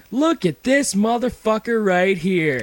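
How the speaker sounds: high yelled outburst. Retelling how a woman in a coffee shop yelled from the bathroom: imitating a woman yelling. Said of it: "this chick yells".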